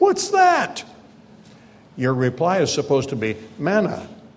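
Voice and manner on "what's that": put-on whiny, plaintive, very high child's voice. Describing kids seeing something new on the table, imitating a plaintive young voice. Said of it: "you hear a plaintive young voice say".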